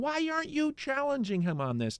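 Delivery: mock yelling, very high screamed. Recalling watching an interview, the speaker retells screaming at the interviewer. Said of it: "parts of it I was screaming, saying".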